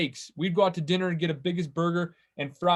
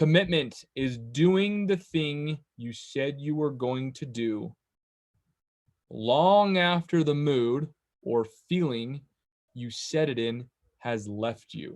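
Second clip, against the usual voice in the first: slow, deliberate, measured out word by word; 3 semitones lower than usual. Speaker gives a definition for listeners to write down, said slowly. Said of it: "I'm going to say it slowly".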